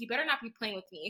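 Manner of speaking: imitated angry tone. Retelling a best friend's reply on the phone at work: imitating an angry friend. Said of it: "she was just getting mad".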